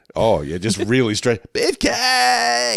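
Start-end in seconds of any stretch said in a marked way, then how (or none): 1.5-2.7 very high, rough, raspy screamed word. Quoting a character screaming along with an infomercial: imitating a scream. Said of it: "he just starts screaming it with the guy".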